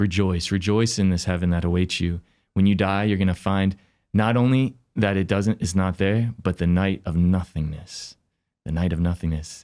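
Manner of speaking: ordinary talk, nothing marked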